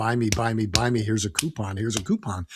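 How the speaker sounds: ordinary delivery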